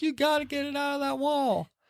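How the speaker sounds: very high, soft, tearful sobbing whimper. Retelling a kitten trapped in a wall, imitating Margie sobbing. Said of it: "Margie starts sobbing and crying".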